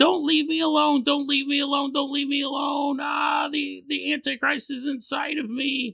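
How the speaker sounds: acted screaming. Retelling a woman screaming at the start of a night shift; retelling a woman's screaming. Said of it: "she's screaming".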